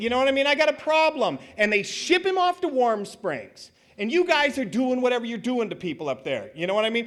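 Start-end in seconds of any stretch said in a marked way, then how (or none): 0.5-1.4 high, pleading, begging voice. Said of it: "he pleads".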